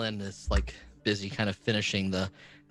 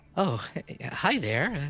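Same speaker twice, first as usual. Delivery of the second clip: small, high, squeaky little mouse-lady voice; 5 semitones higher than usual. Game narrator voices a small mouse-folk lady greeting the player: small mouse-folk lady voice. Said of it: "a small little mouse folk lady".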